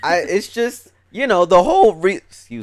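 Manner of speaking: voice cracking. Talking with others about a show, voice cracking mid-sentence. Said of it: "I don't know why my voice cracked".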